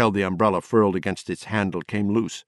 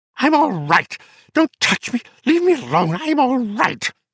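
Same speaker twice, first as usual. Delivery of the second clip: shrieking, very high; 4 dB louder than usual. Reading a novel aloud, a character in the other room cries out: shrieking. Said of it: "Patricia McCardle was shrieking".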